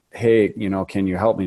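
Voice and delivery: put-on quiet, soft-spoken voice. Retelling what the very first patient asked: imitating Ken's quiet, soft-spoken voice. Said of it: "He's really quiet and soft-spoken".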